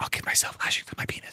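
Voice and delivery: very quiet whisper under the breath. Saying something so Chris can't hear it, very quiet. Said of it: "I'm going to say it really quietly so she can't hear me".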